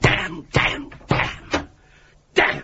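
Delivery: slow, angry cursing with spaced-out words. Swearing so loudly that it is heard outside in the office: loud angry swearing. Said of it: "Will you please keep your voice down?".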